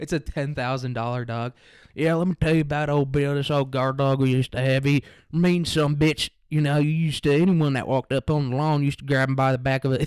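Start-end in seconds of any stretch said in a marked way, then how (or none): 1.9-10.1 put-on suburban fake-country cowboy drawl. Mocking a suburban guy from Riverside who talks like a rancher: imitating a suburban fake-country drawl. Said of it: "talking like this".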